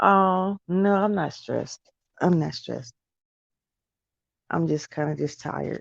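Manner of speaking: weary, tired speech. Answering a commenter who says they sound stressed, tired voice. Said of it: "This is my tired voice".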